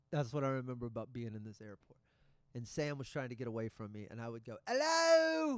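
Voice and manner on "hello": ridiculous exaggerated English accent, loud, very high, drawn out. Retelling being kind of drunk in an airport, do a ridiculous exaggerated Russell Brand English accent. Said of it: "I was doing a ridiculous English accent".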